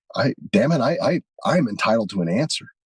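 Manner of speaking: flustered, upset, sputtering, stammering indignation. Retelling a woman's words to the president, imitating someone upset. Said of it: "Now she's getting upset".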